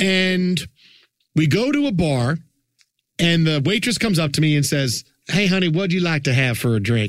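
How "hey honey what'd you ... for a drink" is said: put-on New Orleans accent. Retelling a waitress in New Orleans asking for a drink order: imitating waitress's New Orleans accent. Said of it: "I love your accent".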